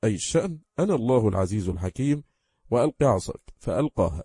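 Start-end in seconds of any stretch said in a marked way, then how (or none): none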